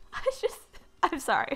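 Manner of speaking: laughing through words. Sewing pants from scrap fabric, laughing at own idea: laughing while talking. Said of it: "I'm laughing at myself".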